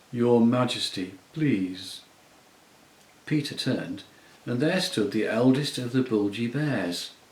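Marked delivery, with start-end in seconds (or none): 0.2-2.1 thick, sleepy, drowsy voice, slower. Reading a story, the narrator voices a bear interrupting Peter, thick sleepy voice. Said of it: "a thick, sleepy voice said".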